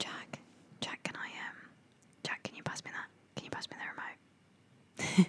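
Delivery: hushed, slow, drawn-out, secretive whisper. Acting out asking someone for the remote: pretend whispering. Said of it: "everyone would think that you were trying to tell them a secret".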